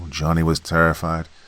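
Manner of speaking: plain reading voice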